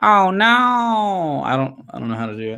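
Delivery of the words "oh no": camp, high cartoon voice, drawn out.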